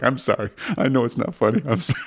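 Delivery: mock apologetic words, high-pitched, spoken through laughter. Retelling how the cleaning lady apologized: imitating someone laughing while apologizing. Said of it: "and she's laughing at me".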